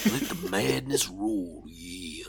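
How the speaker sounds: very deep put-on voice, pitched right down. Reading a movie synopsis in a Randy Savage voice. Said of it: "do it in Randy, Randy Savage?".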